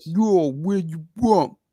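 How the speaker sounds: put-on Brooklyn New York accent. Discussing someone's new york accent, imitating it in a brooklyn new york accent. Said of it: "he got that Brooklyn kind of".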